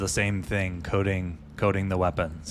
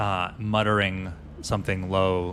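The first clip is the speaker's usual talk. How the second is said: ordinary talk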